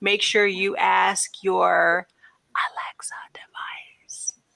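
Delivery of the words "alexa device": hushed, breathy whisper under the breath. Podcast host wrapping up the episode with a device nearby: whispering. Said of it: "I'm whispering because I got one over here".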